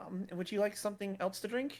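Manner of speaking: shift to friendly manner. Voicing a character whose demeanor suddenly shifts: shifted friendly demeanor. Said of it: "Her demeanor suddenly shifts again".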